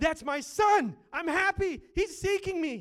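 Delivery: overjoyed, very high, loud joyful shout. Voicing God the Father answering a repenting child: acting out excitement. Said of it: "that kind of excitement".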